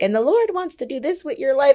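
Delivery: high, solemn, prophet-like voice.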